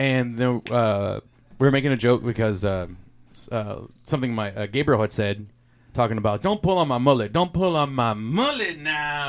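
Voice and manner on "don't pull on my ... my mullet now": mock drunken speech. Retelling what Gabriel said at the poker night, imitating drunk Gabriel. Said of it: "He was really drunk".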